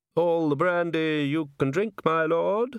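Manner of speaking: sweet-talking, wheedling, coaxing tone. Reading a novel, the narrator voices a speaker coaxing Nobby, in a wheedling voice. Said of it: "said a wheedling voice".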